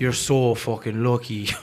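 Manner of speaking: put-on Irish accent in a comedian's style. Joking with friends on camera, the speaker does an irish comedian impression. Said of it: "I'm just doing an impression of an Irish".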